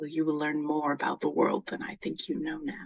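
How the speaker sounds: stage whisper with a promising, enticing tone. In a roleplay scene, the speaker's character leans over to a seated woman; whispering quietly. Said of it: "I whisper to her quietly".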